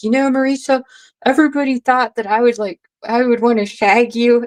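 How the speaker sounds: put-on chatty, storytelling Irish accent. Recalling what a man met at Flag Down once said, in his Irish accent. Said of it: "in his Irish accent".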